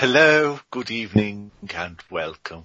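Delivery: spooky haunted-house style put-on voice. A co-host answers when called on at the show's start, spooky Haunted Mansion voice. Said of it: "That was a bit Haunted Mansion there".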